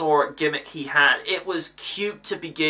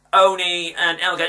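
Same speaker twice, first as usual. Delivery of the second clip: plain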